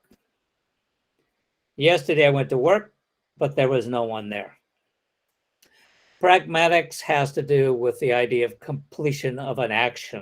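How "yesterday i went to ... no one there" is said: rising tune on work, then falling. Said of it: "non-falling at the end suggests more talk to come".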